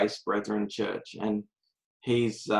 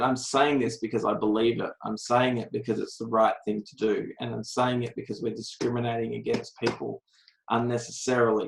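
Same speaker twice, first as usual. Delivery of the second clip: ordinary talk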